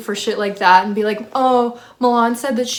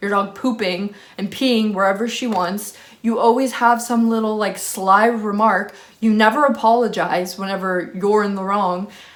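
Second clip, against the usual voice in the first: ordinary delivery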